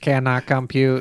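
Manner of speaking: mechanical robot voice. Asked to let the group hear it, the speaker does a robot voice. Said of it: "let me hear your robot voice".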